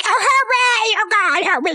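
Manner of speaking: high, frantic, terrified, flipping-out scream. Retelling being stuck in a loud bell tower: imitating own screaming. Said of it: "And I started screaming".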